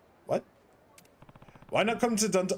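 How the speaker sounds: fast, put-on Chinese accent. Voicing a ninja pitching a trip to Dundoko Island resort, in a put-on Chinese accent. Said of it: "I don't know why I'm giving you a Chinese accent".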